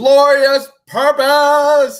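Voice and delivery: high, loud, belted-out heroic cry. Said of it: "Old Man Loki when he said".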